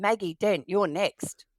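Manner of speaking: acted big, stern, loud voice. Retelling how she called out the next patient in a pretend doctor game, imitating a big stern voice. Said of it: "in a big stern voice called out".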